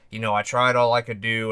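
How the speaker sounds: ordinary delivery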